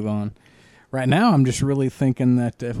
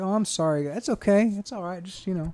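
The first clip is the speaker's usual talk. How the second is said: mock gushing, pitched-up, all-apologetic voice; 8 semitones higher, 5 dB quieter than usual. Imitating a woman who will apologize after being snapped at: imitating someone apologetic. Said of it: "She'll be all apologetic".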